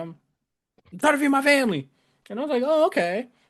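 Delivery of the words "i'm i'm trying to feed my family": mock indignant anger, pitched up. Retelling a man's angry reply when asked about his job, mock-angry reply. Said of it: "he was just like angrily".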